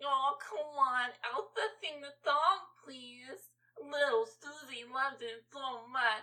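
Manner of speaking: put-on pretentious, soft, sugary baby talk. Complaining about parents, mimicking a pretentious mom's baby talk to her kid. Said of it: "talking baby talk to her kid like".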